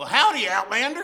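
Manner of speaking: loud, high backwoods hillbilly voice. Narrating a story and voicing a local hillbilly's greeting, in a hillbilly voice. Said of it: "Cody is met with a local hillbilly".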